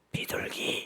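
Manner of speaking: whispered in a small, hushed voice. Retelling a grandmother's reply at the bank, quiet, small-voiced '비둘기'. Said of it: "작은 목소리로 비둘기 이렇게 말하더라는 겁니다".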